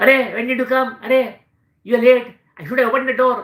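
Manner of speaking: loud, high barking voice. Speaker imitates one of their security guards greeting them home, imitating his barking voice. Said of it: "he speaks like this".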